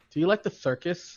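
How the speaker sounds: imitated, put-on lisp. Retelling a movie scene, quoting a character after he starts lisping: imitating a character's lisp. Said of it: "and then he has the lisp".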